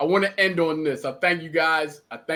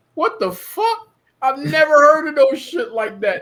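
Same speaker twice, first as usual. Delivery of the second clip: laughing while talking, higher pitch and louder; 11 semitones higher, 6 dB louder than usual. Retelling a reaction to a strange KFC order: retelling a laughing reaction. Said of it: "we started laughing like".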